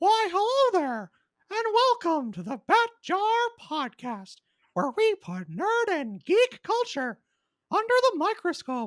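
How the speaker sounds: squeaked out high with swooping pitch. Opening the podcast for listeners, Mickey Mouse impression. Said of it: "my Mickey Mouse impression".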